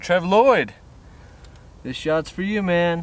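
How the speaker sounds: breathing hard. Drawing names in a prize giveaway, announcing a winner: out of breath. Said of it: "I'm breathing hard".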